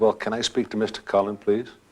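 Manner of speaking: usual speaking voice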